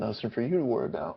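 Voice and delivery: muttered under breath. Playing a character answering another's question: under his breath. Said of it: "Under his breath as well".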